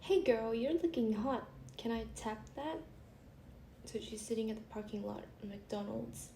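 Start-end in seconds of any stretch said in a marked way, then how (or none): none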